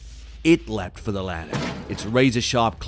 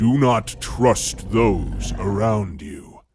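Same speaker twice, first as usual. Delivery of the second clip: low, deep, threatening, menacing beast's voice; 3 dB louder than usual. A creature speaks to the narrator instead of attacking: deep, menacing voice. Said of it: "spoke to me in a deep and menacing voice".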